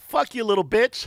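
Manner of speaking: breezy, amiable, light and friendly-sounding delivery. Retelling how a man insulted them in his own language, mimicking his smiling delivery. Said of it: "with a smile, like this".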